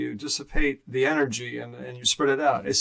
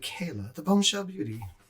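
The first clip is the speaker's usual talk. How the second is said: put-on English accent slipping out; 4 semitones higher, 6 dB quieter than usual. Calling out a nickname for fun: put-on british accent. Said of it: "there's that British accent coming out".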